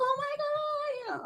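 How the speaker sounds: mock, very high, very soft excited gush. Retelling the kids' reaction on the phone, imitating excited kids. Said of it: "all excited".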